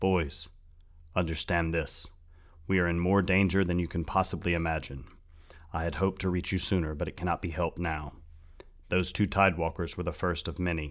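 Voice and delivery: ordinary delivery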